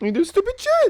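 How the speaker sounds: voice cracking, crackling, very high-pitched. You confront someone who then remarks on how you sound, your voice crackling, high-pitched. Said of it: "Voice all crackling, going high pitch".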